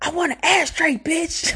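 shrill, very high, loud, acted-out screaming. Retelling how a husband screamed at his wife, retelling a scream. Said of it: "And he's screaming".

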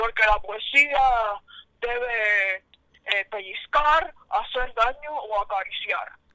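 slow, hoarse trucker voice, debe stretched out. Retelling what a poet said in an interview: Gloria Fuertes's hoarse trucker voice. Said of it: "así con esa voz de camionero".

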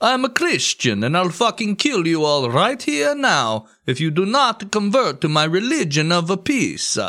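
put-on high Spanish accent. Retelling a history story, speaker quotes Cortés at a temple, Cortés accent impression. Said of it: "I get it with his accent".

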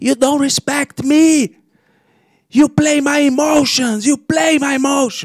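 put-on Chinese accent, very high, argumentative tone. Retelling an argument at a restaurant, quoting a woman there: imitated Chinese accent. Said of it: "gostei do seu sotaque cara".

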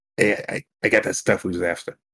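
secret-sounding whispered aside. Scampering past a table on the way to the bar, whispered. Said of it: "I'll whisper to Bond".

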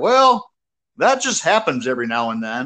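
put-on folksy West Virginia hillbilly accent. Retelling the grandfather's reply to the speaker's story, imitating West Virginian hillbilly accent. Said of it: "his old hillbilly manner".

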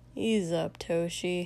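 bored, low-pitched voice. Narrator voicing an unnamed speaker addressing Toshi, in a low, bored voice. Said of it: "in a low, bored voice".

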